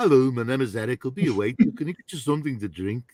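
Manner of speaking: put-on Liverpool accent. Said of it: "I used more of a, a Liverpool accent".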